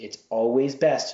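ordinary delivery

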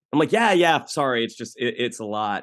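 plain

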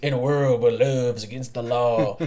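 deep, low, epic movie-trailer narrator voice. Retelling a cartoon scene where Hank suggests a movie voiceover: Boomhauer movie voiceover voice. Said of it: "Hank suggest to Boomhauer that he can do the movie voiceover".

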